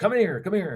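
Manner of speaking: shrill, very high shout. Retelling how Brian called from around the corner: imitating Brian shouting. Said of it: "shouts across around the corner".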